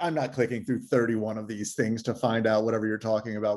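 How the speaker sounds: ordinary delivery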